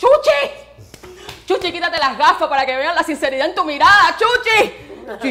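mock high-pitched yelling. Retelling how they shouted at someone on the phone, retelling a yell at the phone. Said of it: "Y yo le gritaba al teléfono".

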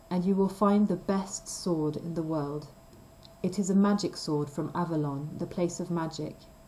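ordinary delivery

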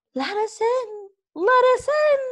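eerie, very high shrieking wind voice. Reading a storm story aloud, voicing the wind in a shrieking wind voice. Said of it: "shrieked the wind".

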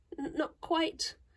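stuttering voice. A girl answers an angry man's question, stammering. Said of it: "stammered Amy".

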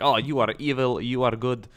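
put-on Russian accent. Gamer quoting someone's reaction to attacking Czechoslovakia, in a Russian accent. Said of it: "I don't know why I sound like I'm Russian".

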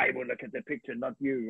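put-on voice with an Italian accent. Retelling what a man said while drying a photo, imitating Marcello's Italian voice. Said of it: "he said in this Italian voice".

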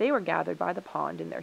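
ordinary delivery

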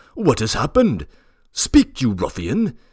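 loud, demanding, pressing outcry. Reading a story: an uncle confronts a sobbing boy, crying out. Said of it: "cried my uncle".

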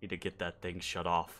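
very low, soft giant's mumble under the breath. Game narrator voices the giant as the mirror shimmers away, Ustova mumbling. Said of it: "you can hear them mumbling".

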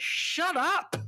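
sharp sudden shout.

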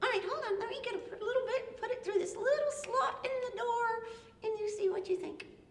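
high, soft, small little pig character voice. As one of the three little pigs, offer the wolf spaghetti in a put-on little pig voice.

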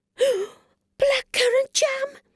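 very high, thrilled, excited cry. A girl looking for the right colour for her painting, an excited cry. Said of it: "Cried Treacle excitedly".

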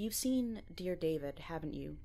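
plain

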